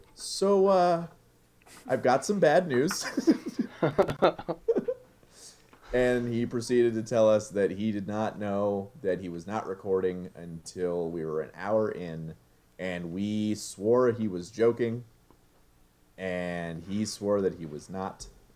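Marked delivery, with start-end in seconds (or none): 0.2-3.1 embarrassed, sheepish voice. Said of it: "Shane very sheepishly said".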